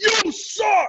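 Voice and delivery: mock very high, shrill jeering scream. Retelling a game when dad yelled at the pitcher: imitating a scream. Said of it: "my dad just screams".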